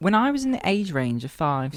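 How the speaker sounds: fake, put-on British accent. Podcast speaker, told to go ahead, starts a story in a put-on British accent. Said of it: "I'm gonna make them British".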